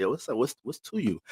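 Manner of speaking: put-on Chicago accent with street slang. Speaker imitates how people from Chicago talk, in a Chicago accent. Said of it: "when y'all be saying that shit, like".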